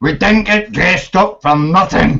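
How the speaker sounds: sounding like a pirate. Asked to say a line, the speaker repeats it in a pirate-like accent. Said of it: "now he sounds like he has a pirate accent".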